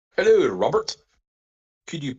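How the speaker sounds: high-pitched Australian accent attempt. Reading a viewer's letter aloud, trying a Capaldi voice. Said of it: "my best Capaldi voice".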